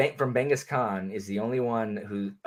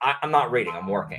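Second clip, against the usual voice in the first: plain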